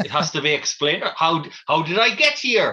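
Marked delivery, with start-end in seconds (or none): 1.2-2.7 slow, drawn-out put-on Welsh accent. Trying out an accent on a question, put-on welsh accent. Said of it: "That's my Welsh accent".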